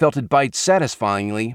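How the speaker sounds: ordinary delivery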